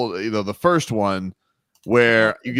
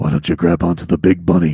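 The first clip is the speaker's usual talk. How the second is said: put-on mutter through teeth, much lower; 5 semitones lower, 4 dB louder than usual. Speaker retelling what a man said into their ear after a photo, imitating muttering through teeth. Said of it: "are you like talking underneath your teeth?".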